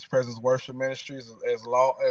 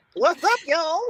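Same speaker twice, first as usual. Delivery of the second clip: very high, loud cartoon-character voice; 5 dB louder than usual. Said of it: "You sound like a cartoon character".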